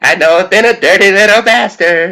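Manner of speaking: very high-pitched cartoon character voice. Quoting a cartoon scene in a Cartman voice. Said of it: "Who did the Cartman voice?".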